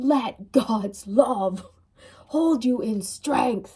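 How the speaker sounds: angry, mad-sounding delivery. Speaker repeats a blessing to the group, sounding angry. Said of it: "I keep speaking like I'm mad".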